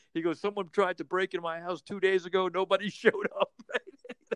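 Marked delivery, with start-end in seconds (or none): 0.4-3.5 mock indignant, fired-up, angry, worked-up rant. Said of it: "He goes into this whole tirade".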